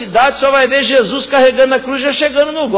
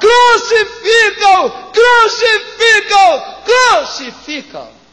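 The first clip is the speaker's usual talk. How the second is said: acted high, repeated crowd-style shouting; 8 semitones higher than usual. Retelling how Nicodemos shouts at Pilate's door: imitating Nicodemos shouting. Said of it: "começa a gritar".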